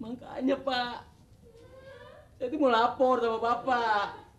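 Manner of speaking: tearful, high crying voice. Reporting about an inherited antique to the neighborhood head, crying while speaking. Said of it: "Kok nangis?".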